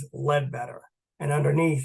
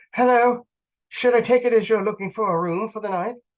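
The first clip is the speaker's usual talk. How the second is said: put-on light Irish accent, slightly raised; 8 semitones higher, 5 dB louder than usual. Reading a female character's greeting aloud, with a slight Irish lilt. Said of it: "Her voice has a slight Irish lilt".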